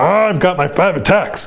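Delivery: orc-like fantasy monster voice. Describing a tabletop game, speaker voices the Space Marines facing a Hive Tyrant: orc-like voice. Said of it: "I know he sounded like an orc there".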